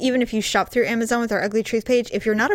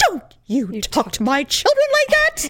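put-on haughty, indignant, swooping tone with near-English accent; 7 semitones higher than usual. Describing a mother whose kids are yelled at by the dad: mock-haughty indignant mother. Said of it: "they all can do that tone".

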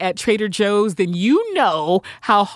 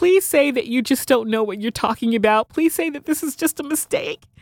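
mock begging, imploring, earnest pleading tone; 4 semitones higher than usual. Retelling her reaction to a product being discontinued, acting out begging. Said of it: "So I am just begging Trader Joe's".

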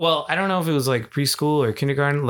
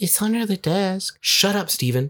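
put-on childlike kid voice; 4 semitones higher than usual. Asked to retell a school-days line like a kid, saying it like a kid. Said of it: "Say it like you were a kid".

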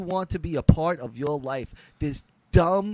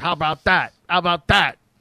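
louder, mocking impression voice; 6 dB louder than usual. Recapping a Sopranos scene, mimicking Tony mocking Bobby, in a mocking Tony Soprano impression. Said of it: "Tony mocks him".

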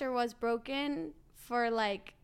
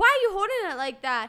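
mock scream, higher and louder; 7 semitones higher, 9 dB louder than usual. Retelling a golf lesson, imitating the teacher: imitating someone screaming. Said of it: "he's screaming at me".

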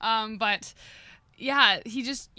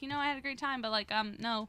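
normal talking voice

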